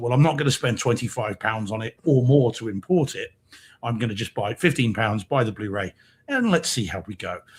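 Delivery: normal talking voice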